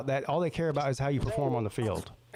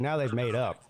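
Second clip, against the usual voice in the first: plain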